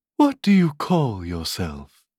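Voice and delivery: tender, sweet-toned, gentle voice. A fawn speaks at last to Alice; soft sweet voice. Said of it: "such a soft sweet voice it had".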